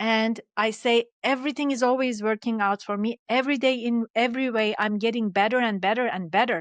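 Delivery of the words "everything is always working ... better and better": ordinary delivery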